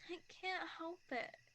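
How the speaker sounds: tearful words spoken while crying. Admitting fear of forever to another speaker, crying while talking. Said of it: "Are you crying?".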